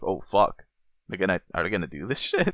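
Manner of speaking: usual speaking voice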